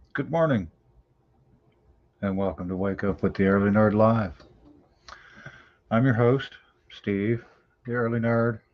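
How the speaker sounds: quiet, soft-spoken, hushed speech. The host opens his live morning show, talking quietly. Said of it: "I'm talking quietly".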